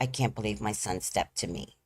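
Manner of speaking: put-on crying. Retelling the time his son stepped to him, the speaker is imitating his own crying. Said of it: "by this time, I'm crying".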